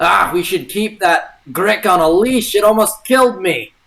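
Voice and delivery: goblin voice. In a fantasy game, voicing a character posing as a goblin, convincing goblin voice. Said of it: "adopts his his most convincing goblin".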